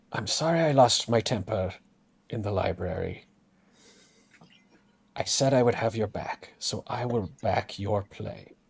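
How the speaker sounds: soft, private whispered aside in character. Whispering an apology to another character while approaching: whispering in character. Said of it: "just kind of whisper to him".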